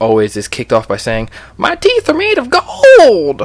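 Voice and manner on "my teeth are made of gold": put-on gold miner voice, very high and swooping. Talking about a game's Gold Rush mode, show off the gold miner voice. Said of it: "use the gold miner voice".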